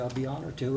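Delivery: ordinary delivery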